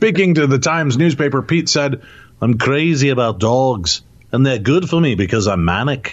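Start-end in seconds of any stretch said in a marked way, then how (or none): 2.4-6.1 put-on English accent, a best attempt. Reading out a quote from a newspaper interview, in an attempted English accent. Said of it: "That's my best English accent".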